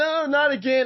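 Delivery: very high, loud, shrill scream. Retelling how a frightened mother reacted: imitating a woman screaming. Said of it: "She screams".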